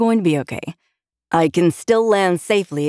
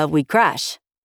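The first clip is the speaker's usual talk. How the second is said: casual, unbothered, nonchalant tone. A pilot answers a woman's alarmed question with a shrug, nonchalant. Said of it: "said with a little nonchalant shrug".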